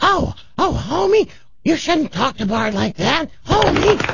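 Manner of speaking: put-on cartoon voice, very high pitched. Showing off a cartoon impression she has down: Marge Simpson voice. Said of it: "I got Marge down".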